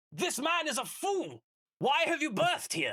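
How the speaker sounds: very high-pitched, swooping shout in a character voice. A player speaking in character to Flink: shouting. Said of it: "You don't need to shout at me".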